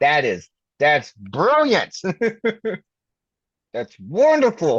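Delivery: swooping, dripping sarcasm with fake enthusiasm. Reacting to grim news from the other speaker: sarcastic. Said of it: "if you can't hear it in my voice".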